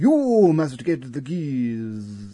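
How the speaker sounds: silly put-on posh voice, key words drawn out. Retelling a Doctor Who story, quoting a character, in a stupid posh voice. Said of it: "in that sort of stupid posh voice".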